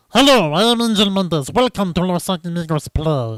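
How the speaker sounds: put-on tiny fantasy person voice. Showing what reaching too high a pitch would sound like: munchkin voice. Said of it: "sounding like a munchkin instead".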